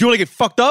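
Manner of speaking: put-on aggressive delivery, shrill, very high, loud. Retelling a man's threat while recounting the encounter, mock-aggressive threat. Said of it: "I was trying to convey the aggression".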